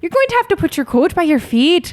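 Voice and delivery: high put-on Irish accent. Retelling a request made to passengers on a plane, accidental Luna Lovegood voice. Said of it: "That's a little more Luna Lovegood than I would like".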